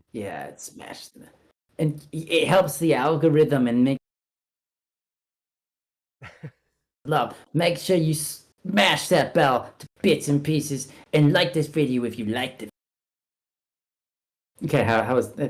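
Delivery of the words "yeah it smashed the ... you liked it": phony French accent used throughout. Doing a mock video outro for viewers: mock French accent. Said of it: "That's French accent".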